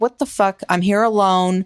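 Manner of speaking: put-on angry, pissed-off tone. Retelling a wife's reaction on a phone call: imitating someone pissed off. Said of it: "you can tell she's pissed".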